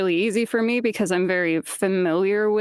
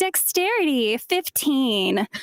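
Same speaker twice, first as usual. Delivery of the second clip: peppy cheerleader voice, high, swooping, sing-song; 5 semitones higher than usual. Recalling how they read a lit RPG's character sheets: put-on peppy cheerleader voice. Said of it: "in like a really peppy cheerleader voice".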